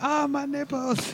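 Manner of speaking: mock scream of pain, high, slow, drawn-out yelp.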